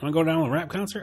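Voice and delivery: put-on Southern country accent. Joking with co-hosts about going to concerts, in a put-on Southern accent. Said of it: "I guess I actually go to Southern".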